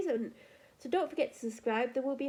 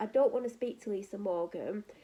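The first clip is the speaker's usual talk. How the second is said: plain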